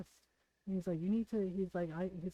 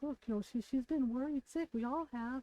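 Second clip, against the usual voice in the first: put-on soft gentle voice, higher pitch; 5 semitones higher than usual. Retelling what his mom said to him while the speaker cried, imitating gentle talking. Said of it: "just gently talking to him".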